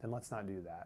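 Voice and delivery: whispering. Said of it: "That part was in a whisper".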